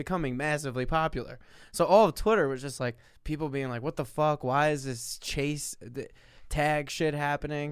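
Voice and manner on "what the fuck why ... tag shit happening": normal talking voice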